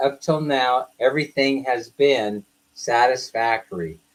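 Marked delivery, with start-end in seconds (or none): none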